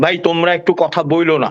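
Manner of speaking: ordinary delivery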